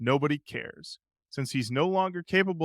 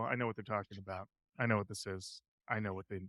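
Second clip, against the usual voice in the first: ordinary talk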